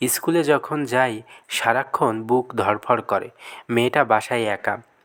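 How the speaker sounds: ordinary delivery, nothing marked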